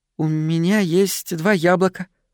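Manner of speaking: shy, bashful, timid. A girl offers a boy two apples to win a kiss; timid. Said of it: "робко сказала она".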